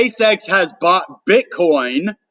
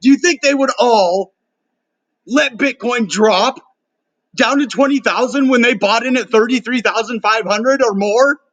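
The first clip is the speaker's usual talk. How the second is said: excited, worked-up, fired-up tone; 5 semitones higher than usual. Talking to viewers he calls guys, mid-question, catching himself: excited. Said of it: "I'm sorry I'm getting so excited".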